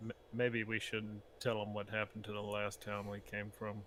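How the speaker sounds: quiet, low aside muttered under the breath. Playing a character who mutters to a party member: muttering under breath. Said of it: "mutter under my breath".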